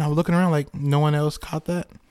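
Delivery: ordinary delivery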